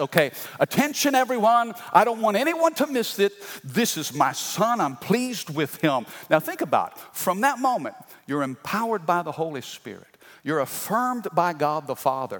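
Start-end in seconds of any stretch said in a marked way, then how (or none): 0.0-6.1 high, proclaiming, attention-calling announcer voice. Retelling the moment God the Father speaks from heaven: booming voice of God. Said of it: "this booming voice".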